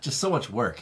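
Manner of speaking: sarcastic delivery. Answering about adding card overlays to a video: sarcastic tone. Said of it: "you say it like it's sarcastic".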